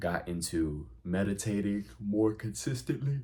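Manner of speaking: talking through a yawn. Speaker telling the audience about their routine at three a.m., yawning. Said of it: "Excuse me for yawning".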